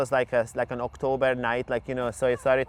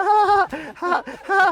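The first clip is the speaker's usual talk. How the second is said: put-on hysterical laugh, much higher; 6 dB louder than usual. Retelling hitting her head with a pillow, imitating a hysterical laugh. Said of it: "that really hysterical laugh".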